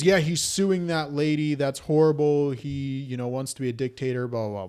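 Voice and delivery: ordinary talk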